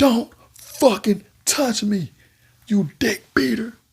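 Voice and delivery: very high, furious, shrieking angry yell. Retelling a roommate telling another not to touch him: imitating an angry yell. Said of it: "He was mad than a motherfucker".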